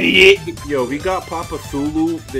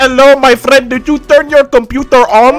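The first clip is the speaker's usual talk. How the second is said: put-on Indian accent, higher and louder; 10 semitones higher, 10 dB louder than usual. Teasing a friend about how they sound on the call, Indian tech support accent. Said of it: "sound like those Indian tech support dudes".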